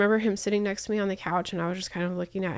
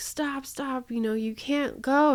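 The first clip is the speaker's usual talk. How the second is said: desperate, high, tearful, crying, pleading tone; 5 semitones higher than usual. Recounting a man blocking the car to stop the speaker leaving: retelling a crying plea. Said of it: "he's crying like the fucking Notebook".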